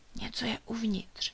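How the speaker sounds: hushed whisper under the breath. Reading a children's story, a little creature answers the others, whispered. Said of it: "odpověděla mu Ilonka také šeptem".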